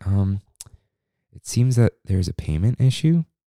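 hushed, quiet, deferential and respectful tone. Retelling what a cast member came up and said to the group: respectful, quiet voice. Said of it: "quiet voice".

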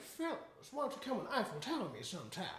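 put-on mixed Southern belle and British royal accent. Quoting what a woman may have said, in a Southern belle and British royalty voice. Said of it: "Southern belle and British royalty mixed together".

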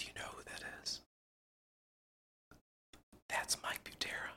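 secretive, hushed whisper. Speaker retells being pulled aside by someone: retelling a hushed aside. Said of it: "He's like in a hush voice".

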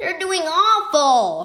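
said in plain disgust. A fan watching his team fall several points behind, disgusted. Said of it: "Marco said in disgust".

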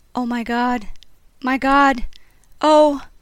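shaken, shocked. Voices heard through a woman's wall, shaken. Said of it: "shaken voices".

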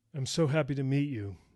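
open, exclaiming tone. Meeting an uneasy newcomer for the first time: exclaiming. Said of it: "Joe exclaimed".

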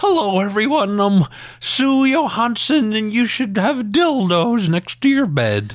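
very high sing-song voice swooping up and down. Imitating Sue Johansson in that old up and down voice. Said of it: "Her voice actually sounds like that. It's like that old up and down".

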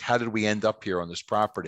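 ordinary talk

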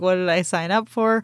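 ordinary talk, nothing marked

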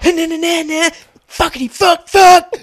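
put-on top-of-the-lungs yell. Retelling a man yelling from across the Aldi, imitating him belting a yell. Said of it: "he's belting it".

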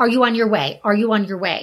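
ordinary talk, nothing marked

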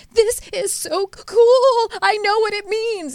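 put-on very high, drawn-out, slow sobbing voice. Retelling what the speaker told her husband while sobbing, imitating own sobbing. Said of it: "while i was uh, sobbing".

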